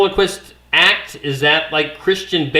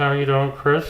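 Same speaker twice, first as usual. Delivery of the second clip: talking out of the side of the mouth like a ventriloquist; 3 dB quieter than usual. Greeting a caller live, talking out of the side of the mouth like a ventriloquist. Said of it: "We're gonna talk like this".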